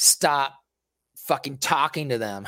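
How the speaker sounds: ordinary talk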